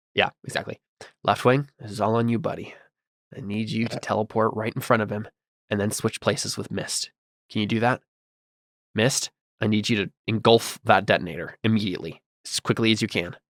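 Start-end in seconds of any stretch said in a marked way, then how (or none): 1.2-13.3 speaking quietly in a put-on character voice, hushed. Speaking to teammates over comms in character, trying not to be heard: speaking quietly in character. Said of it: "trying to say it quietly".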